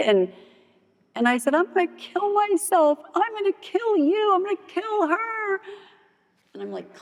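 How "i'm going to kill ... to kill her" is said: put-on screaming, much higher pitch. A woman retells screaming threats at her husband over the phone, retelling her own screaming. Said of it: "I'm screaming at him".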